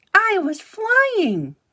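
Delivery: very high little squeak. Narrator reading a son's cry after the wind briefly lifts him, Brightbill squeaking. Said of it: "he squeaked".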